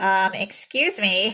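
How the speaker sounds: put-on nasal voice. Retelling a scene where someone spoke in a voice: imitating a nasal put-on voice. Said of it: "it nasally".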